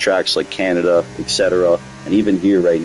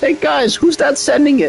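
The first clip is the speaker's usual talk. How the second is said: very high, piping put-on voice. Talking to viewers, the speaker does a Maestro impression. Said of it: "I love the Maestro because it's the high pitch".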